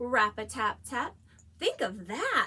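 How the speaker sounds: exclaimed delivery. Reading a line first for listeners to echo back, read with exclamation. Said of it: "Let's read it with some exclamation".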